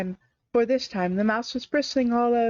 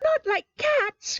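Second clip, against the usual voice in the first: piercing, shrill, very high, impassioned cry; 14 semitones higher than usual. A mouse cries out at someone who mentioned cats: shrill, passionate voice. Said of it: "cried the mouse in a shrill, passionate voice".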